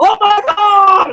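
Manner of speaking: put-on terrified cry, very high frightened scream. Speaker mocks how people holler during storms, imitating screaming. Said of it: "Screaming and hollering when he visits you".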